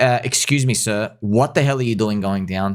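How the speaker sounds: ordinary talk, nothing marked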